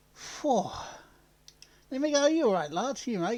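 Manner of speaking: out of breath. Welcoming listeners back to the podcast, out of breath. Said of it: "You sound a bit out of breath".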